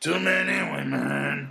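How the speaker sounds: rasping throaty voice. Repeating the puppet character's line: throaty Animal voice. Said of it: "it's all in the throat".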